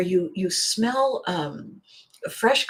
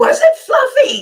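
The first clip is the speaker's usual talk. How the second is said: very loud, shrill, high-pitched screaming shout; 10 dB louder than usual. Retelling a small child leaning forward to a thug: retelling a child's scream. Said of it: "she screams at this thug and says".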